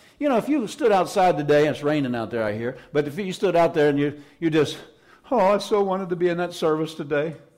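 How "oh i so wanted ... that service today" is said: tearful voice choked with sobbing. Acting out someone outside the church service who wants in: imitating someone crying. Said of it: "and cried".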